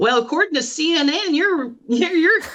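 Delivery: put-on southern drawl. Retelling a friend's phone call from Virginia: imitating a friend's southern drawl. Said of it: "with her sou-, southern drawl".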